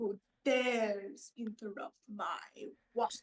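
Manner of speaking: put-on haughty indignant tone. Voicing a character who confronts a child: in-character haughty demand. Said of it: "put his hands on his hip and say".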